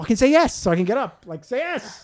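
put-on irritated insistent tone. Retelling waiting for her to answer, imitating own angry thoughts. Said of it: "I started getting angry".

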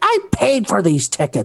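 high, pissy, indignant mock yell.

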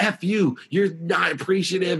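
mock fed-up, angry, high and slow. Retelling what they said back during an argument, re-enacting anger. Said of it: "I was so mad".

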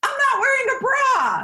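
squeaky, very high, awkward blurted-out delivery. Recounting running into a woman with her husband, the speaker retells her blurting out. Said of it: "She just blurts out".

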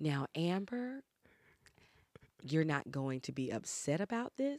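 hushed, soft, slow, drawn-out careful mother voice. Asked to do an impression of her mother: speaking slowly like mom. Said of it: "she's always like speaking slowly about those things".

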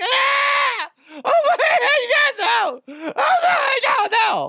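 acted screaming and crying. Retelling her reaction after getting out of the car, the speaker imitates her screaming cry. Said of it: "I hear her scream and start crying".

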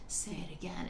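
creepy, romantic leading-man voice.

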